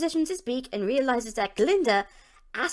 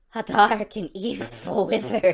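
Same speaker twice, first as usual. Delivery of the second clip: bad cartoon duck voice, louder, slower; 3 semitones lower than usual. Playing a character answering Glinda, in a bad Daffy Duck voice. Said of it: "I apologize for my Daffy Duck voice".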